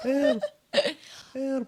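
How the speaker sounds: tiny little voice. Voicing an unseen someone calling to the players for help, in a tiny little voice. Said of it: "you hear a tiny little voice that's like".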